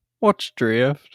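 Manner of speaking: bad put-on Alabama accent. Speaker, prompted by the other speaker to say a phrase, in a bad Alabama accent. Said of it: "can you say what's drift in your best Alabama accent?".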